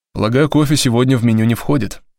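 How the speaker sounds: ordinary delivery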